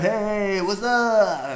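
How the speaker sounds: bad New York accent, very high, very loud, shrill. Acting out people in the photos playing back with him: bad New York accent. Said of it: "That's that's my shitty New York accent".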